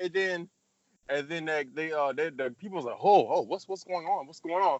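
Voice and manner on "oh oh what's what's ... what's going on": ordinary delivery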